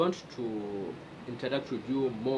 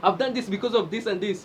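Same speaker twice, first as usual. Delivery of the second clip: voice raised, very loud, pitched up; 9 semitones higher, 9 dB louder than usual. Demonstrating how a person answers when asked why they did something, in a loud, raised voice. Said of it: "like I'm saying something loud".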